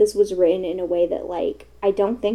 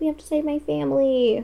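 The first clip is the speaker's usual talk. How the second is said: scornful, taunting, derisive, pitched-up voice; 5 semitones higher than usual. Retelling a scene from the book, mocking Tris impression. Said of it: "I don't know why I'm, like, mocking her".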